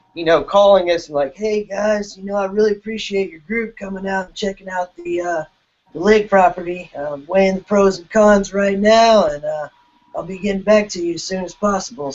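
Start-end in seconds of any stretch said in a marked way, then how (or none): 1.4-12.2 pitched-up stoner guy voice. Retelling a man's phone call to the group, imitating his stoner voice. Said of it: "this guy has a very unique stoner voice".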